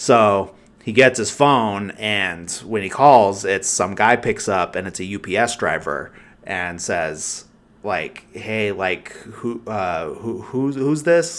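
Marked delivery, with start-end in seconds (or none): 8.3-11.4 mock jittery, hesitant, stammered speech with rising pitch. Retelling a film scene where a stranger answers the phone: imitating a nervous voice. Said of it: "very, like, nervous and everything on the other side of the phone".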